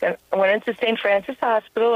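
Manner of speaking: plain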